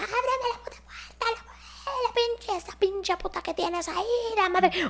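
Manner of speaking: very high, frantic, crazed, shrill screaming. Retelling how a girl at the door started yelling: imitating someone screaming like crazy. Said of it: "empezó a gritar como loca".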